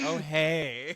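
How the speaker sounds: sultry tone, lingering on a drawn-out hey. Retelling how the guest just said hello: imitating a sultry voice. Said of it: "You were just like".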